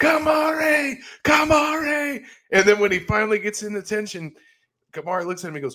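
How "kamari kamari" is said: mock, very high-pitched, loud, repeated screaming. Recalling a scene where he tries to get Kamari Wilson's attention pre-snap, retelling screaming 'Kamari'. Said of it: "he is just screaming his name like 20 times".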